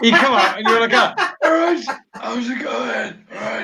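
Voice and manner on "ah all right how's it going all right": voice gone, cracking and failing. Imitating the other speaker coming out after screaming takes: imitating a broken voice. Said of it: "Now we're breaking your voice".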